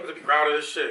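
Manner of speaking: plain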